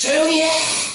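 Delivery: loud, high-pitched yell.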